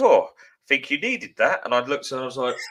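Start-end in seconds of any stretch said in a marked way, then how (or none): 0.0-1.6 put-on posh voice, higher and louder. Retelling a stranger's remark on the tube, in a posh voice. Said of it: "this rather posh voice went".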